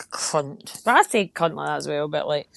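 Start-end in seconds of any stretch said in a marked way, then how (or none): 0.1-0.8 harsh angry 'cunt'. Showing how others say the word, the angry way with a hard k.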